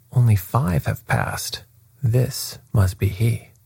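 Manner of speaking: ordinary delivery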